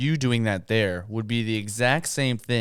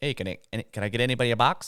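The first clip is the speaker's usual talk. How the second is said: imitated Mexican accent. Retelling a restaurant visit, the speaker quotes the waiter in a mexican accent. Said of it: "he has a Mexican accent".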